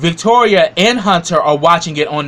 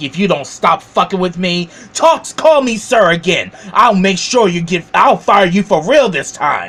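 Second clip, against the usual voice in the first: mock arrogant, full-of-himself, going-off rant; 2 semitones higher than usual. Retelling a show scene where a character goes off: imitating an arrogant rant. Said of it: "Hunter starts going off with his arrogant ass".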